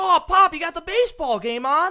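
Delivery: put-on very high, drawn-out, giddy excited kid voice. Acting out how baseball fans react: put-on excited kid voice. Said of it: "it's like a kid getting excited".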